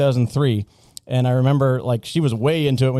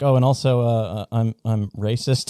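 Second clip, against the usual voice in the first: imitated stammering; 2 semitones lower than usual. Retelling a juror who stands up in court: imitating someone stammering. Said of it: "kinda stammering through his words".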